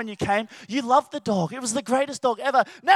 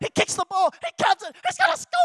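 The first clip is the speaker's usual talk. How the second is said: very high, very slow, swooping, drawn-out commentator voice; 13 semitones higher than usual. Recalling doing live commentary of himself as a kid playing: high-pitched sports commentator voice. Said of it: "my high voice was like".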